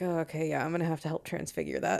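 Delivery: very quiet, hushed, under the breath. The game master voices a character looking over a player's drawing, speaking very quietly. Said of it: "very quietly kind of looks over your shoulder".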